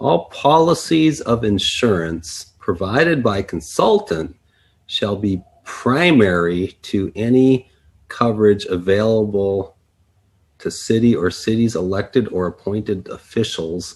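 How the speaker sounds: very slow, careful, deliberate word-by-word reading. Reading an insurance clause from a contract aloud, reading very slowly. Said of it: "let's read this really slow".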